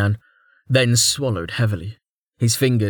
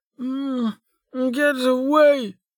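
put-on slurred, slurring words. Narrator reading Velika's line as she struggles with the blankets, slurred. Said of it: "Velika slurred".

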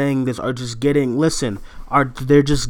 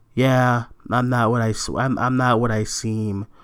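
play-acted, utterly bored, flat monotone drone; 3 semitones lower, 5 dB quieter than usual. Imitating the actress in a trailer who seems bored: bored monotone Brie Larson impression.

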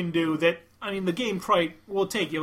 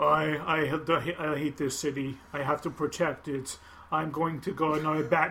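put-on flat, emotionless voice, lower and quieter; 3 semitones lower, 4 dB quieter than usual. Comparing voice performances with a friend, the speaker acts out a line, imitating an emotionless voice. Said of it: "Adam Baldwin had more emotion in his voice".

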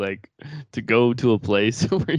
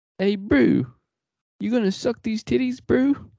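put-on New Zealand accent, pitched very high; 10 semitones higher than usual. Imitating a New Zealander to make fun of her: New Zealand accent. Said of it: "that's a pretty good New Zealand".

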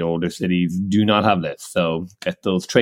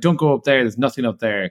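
mock pushy, forceful voice, higher pitch; 5 semitones higher than usual. Retelling how a restaurant owner called them in: imitating a pushy restaurant owner. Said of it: "kind of very strong arming us".

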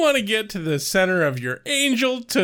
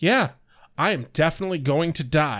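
flat, lower put-on character voice; 3 semitones lower than usual. Imitating Cordelia Chase's line about dying: flat Cordelia Chase delivery. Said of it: "kind of flat".

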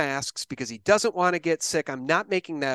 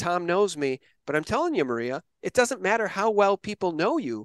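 ordinary talk

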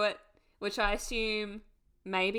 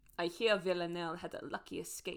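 soft, attempted put-on French accent; 4 semitones lower, 7 dB quieter than usual. Recapping an episode, the speaker voices Helen's line in Helen's attempted French accent. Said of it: "I'm going to try to do a French accent".

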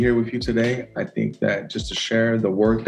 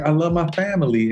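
put-on slight twangy accent; 6 semitones higher than usual. Imitating a nine-year-old daughter saying a line: little twang. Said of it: "with a little twang".

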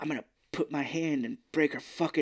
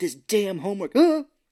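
mock freak-out, higher and louder; 6 semitones higher, 9 dB louder than usual. Retelling how a movie character snaps at her daughter: imitating someone freaking out. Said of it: "freaking out at her".

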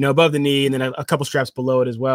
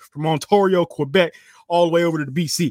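put-on southern US accent, child voice; 4 semitones higher than usual. Listing Canadian places, saying them like a southern kid. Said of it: "i'm gonna say it like a southern kid".

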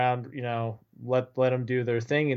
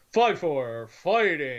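put-on old-school radio voice; 3 semitones higher than usual. Imitating an official's penalty call: Wes McCauley old school radio voice. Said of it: "little kind of radi-, old school radio voice".

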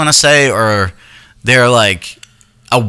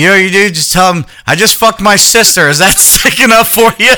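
put-on drunken, pitched-up, blurted outburst; 8 semitones higher than usual. Retelling what D J said while drunk in the truck: imitating a drunk D J. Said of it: "D J pipes up 'cause he's drunk".

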